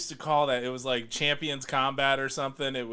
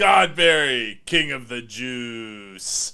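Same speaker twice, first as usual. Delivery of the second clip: commercial announcer voice, much louder; 7 dB louder than usual. Retelling the moment the announcer voice comes in, in an announcer voice. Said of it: "the announcer voice comes in and he's like".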